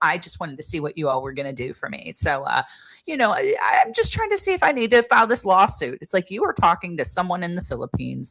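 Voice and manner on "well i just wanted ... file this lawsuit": put-on breezy, offhand, nonchalant tone, swooping pitch. Retelling a caller's lawsuit question: imitating a caller's nonchalant tone. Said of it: "the way she just knows nonchalantly was like".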